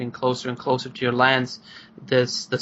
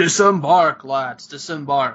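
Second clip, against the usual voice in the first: loud, carrying call; 5 dB louder than usual. Narrating a game scene, a man looking toward the ships gives an order, loud calling tone. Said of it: "in this loud kind of like tone".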